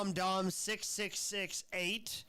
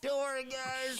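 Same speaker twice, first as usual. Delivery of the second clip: mocking put-on voice, pitched higher; 6 semitones higher than usual. Mocking streamers who reassure their viewers: mocking impression of streamers. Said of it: "I love streamers that like".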